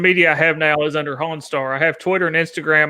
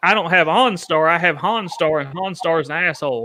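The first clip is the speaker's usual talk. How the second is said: normal talking voice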